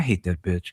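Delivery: voice dropped low, snarky. Retelling what she says after turning away: imitating muttering under breath. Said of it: "under her breath".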